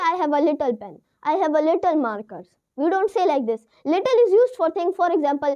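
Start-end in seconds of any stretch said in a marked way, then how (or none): none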